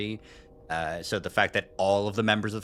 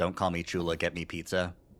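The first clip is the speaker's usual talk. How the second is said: acted dry, expressionless deadpan, level pitch; 3 semitones lower, 3 dB quieter than usual. Imagining what an absent Amber would say, imitating Amber's deadpan. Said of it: "they would deadpan".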